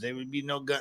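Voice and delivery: put-on, fake Spanish accent. Mimicking someone else's imitation of a wife: mock fake spanish accent. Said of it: "actually mimicking her fake accent".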